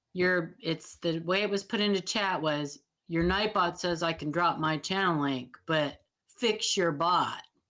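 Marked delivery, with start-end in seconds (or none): none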